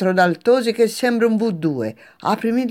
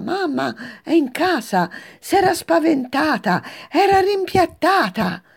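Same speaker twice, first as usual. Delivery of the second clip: high, drawn-out yell at the top of her lungs; 5 semitones higher than usual. Narrator reads the daughter calling from the window, yelling at the top of her lungs. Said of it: "urla a squarciagola".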